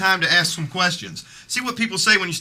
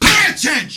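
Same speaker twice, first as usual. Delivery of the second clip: very high, loud, raised shout; 12 semitones higher, 6 dB louder than usual. Demanding attention from others in the same room: shouting. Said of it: "You don't have to shout all the time".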